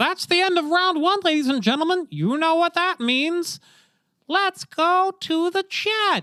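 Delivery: high announcer voice through a feedbacking intercom. Voicing Croak Frog announcing the round's end over the intercom: Croak Frog's feedbacking intercom voice. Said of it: "The feedbacking voice of Croak Frog comes back onto the intercom".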